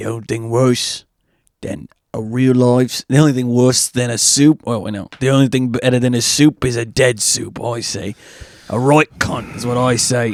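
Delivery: put-on strong British accent. Describing a show's character to a friend: Billy Butcher voice. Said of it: "So he's like".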